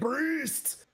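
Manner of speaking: very high, forced out through clenched, gritted teeth. Voicing a struck foe reacting to a priest's spell: through gritted teeth. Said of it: "grits his teeth, and he's like".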